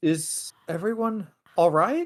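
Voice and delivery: mournful, plaintive, high call from afar. Voicing a figure calling from another room after a fight: plaintive voice. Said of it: "kind of a plaintive voice say".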